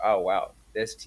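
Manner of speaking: ordinary talk, nothing marked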